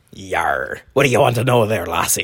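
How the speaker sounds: put-on stock pirate voice with "yar". Playing a pirate asked what the host wants to know: pirate voice. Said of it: "now we want to speak to Pirate Briggs".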